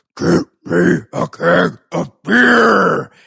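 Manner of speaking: slow, loud, rough demon voice, "beer" stretched out. Retelling a scene where Scotty demands beer at a store: Scotty's deep demon voice. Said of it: "he's got like a deep, like a demon voice, and he goes".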